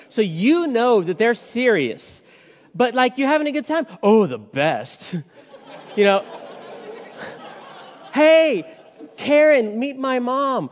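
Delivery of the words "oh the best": low voice, dripping with sarcasm. Showing how a perpetually sarcastic person answers a question, in a sarcastic tone. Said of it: "perpetually sarcastic in tone".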